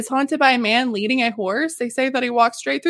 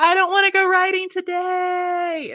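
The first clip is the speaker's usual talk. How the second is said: put-on high, boyish scream with "today" drawn out long; 6 semitones higher than usual. Retelling a ghost story about a haunted boy: imitating a boy screaming. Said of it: "a young boy who just randomly screams".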